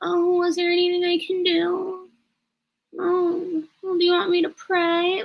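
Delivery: put-on meek, timid, small little-girl voice. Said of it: "she also does sound like a timid little girl".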